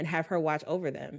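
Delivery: plain reading voice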